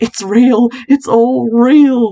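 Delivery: frantic cry.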